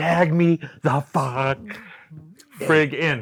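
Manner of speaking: very slow, exasperated, aggravated delivery. Retelling yelling for a tag from outside the ring: retelling own aggravated yell. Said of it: "just yelling".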